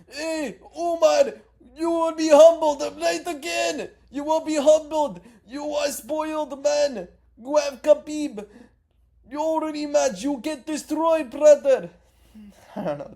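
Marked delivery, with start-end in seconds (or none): 0.1-11.9 very high, shrill, booming, slow, drawn-out taunting. Imagining Merab answering Umar's call-out, do a Merab impression. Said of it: "That's a good impression".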